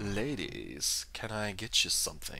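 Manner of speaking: put-on smooth charming accent, very hushed and soft. Speaker imagines how Sanji from One Piece would really sound, suave Sanji accent. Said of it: "he'd have like a suave accent to go with it".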